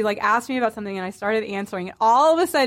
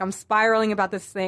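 plain

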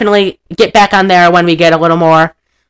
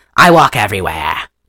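put-on New England regional accent; 9 semitones lower than usual. Quoting a line to show a New England accent: Katharine Hepburn impression. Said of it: "like how Katharine Hepburn has".

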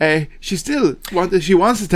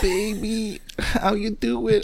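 put-on female voice, higher and much quieter; 8 semitones higher, 5 dB quieter than usual. Asked for his best female catfish voice, he tries one: female catfish voice. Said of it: "What's your best female catfish voice".

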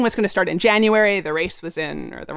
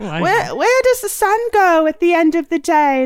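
put-on child's voice, Cockney accent, high and slow; 8 semitones higher, 4 dB louder than usual. Retelling a kid's question from memory, in a put-on Cockney accent. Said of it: "Now I'm making him Cockney".

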